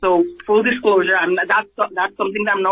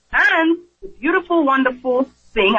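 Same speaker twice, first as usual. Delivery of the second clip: dripping, exaggerated, heavy sarcasm, pitched up; 5 semitones higher than usual. Complaining about insurers refusing to cover friends' children's EpiPens, very sarcastic. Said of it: "I mean that very sarcastically".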